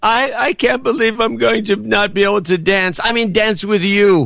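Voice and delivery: very high, put-on, fake tearful crying voice. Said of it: "it was a fake cry".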